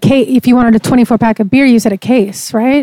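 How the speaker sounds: plain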